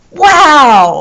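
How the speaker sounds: loud, drawn-out wow with strong feeling. Teaching how to read an exclamation point, said with strong feeling. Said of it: "you have to read it with feeling. Wow! Like that".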